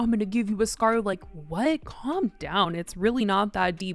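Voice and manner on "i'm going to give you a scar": ordinary talk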